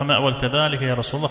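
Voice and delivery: plain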